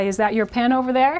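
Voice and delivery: ordinary talk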